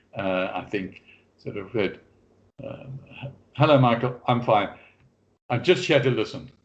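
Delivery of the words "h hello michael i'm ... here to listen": patronizing, superior, condescending, talking-down tone. Retelling how two class attendees replied: imitating a condescending reply.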